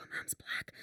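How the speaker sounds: whispered, hushed voice. Retelling what people in town said about a mum: imitating someone whispering. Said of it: "people would whisper".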